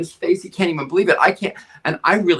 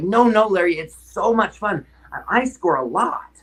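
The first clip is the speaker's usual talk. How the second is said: put-on high, eager, excited child voice; 5 semitones higher than usual. Recalling a boy who got excited telling him about soccer: imitating an excited kid. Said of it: "And he got so excited".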